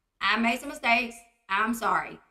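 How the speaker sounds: ordinary talk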